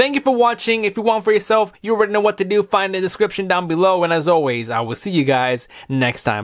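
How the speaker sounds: hurried, rushed, rattled-off fast speech. Wrapping up the video before the battery dies: talking really fast. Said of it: "I'm talking really fast".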